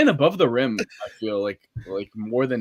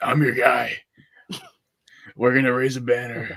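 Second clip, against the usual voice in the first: put-on raspy voice. Picturing how a certain man would talk, imitating his raspy voice. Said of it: "with his fucking raspy ass voice".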